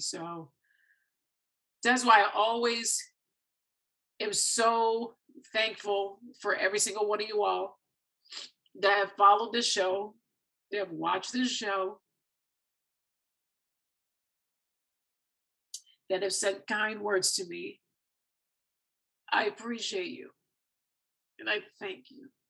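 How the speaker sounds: tearful, crying while speaking. Show host speaking to followers and viewers, tearful. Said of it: "I'm sorry for the sappy tears".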